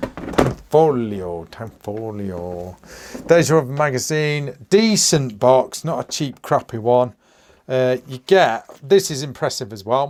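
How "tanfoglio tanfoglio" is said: word said the Italian way, put-on Italian accent. Reading the brand name on a box aloud: put-on Italian accent. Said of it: "I keep wanting to say that with an Italian accent".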